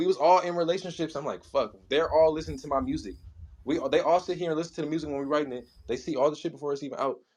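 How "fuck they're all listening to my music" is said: normal talking voice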